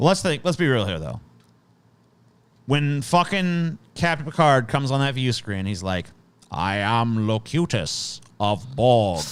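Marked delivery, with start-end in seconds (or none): 6.5-9.2 very slow, deliberate voice, every word dragged out. Quoting the view-screen line from Captain Picard in a Locutus impression. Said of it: "even me doing a shitty impression of that gives me the shivers".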